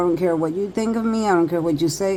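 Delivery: normal talking voice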